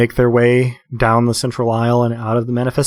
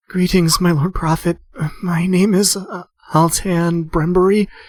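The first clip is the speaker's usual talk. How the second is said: high, trembling, wavering, quavering voice; 6 semitones higher than usual. Voicing a woman kneeling at the altar to greet the prophet, quavering voice. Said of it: "says in a quavering voice".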